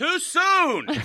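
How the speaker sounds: loud high-pitched yelling.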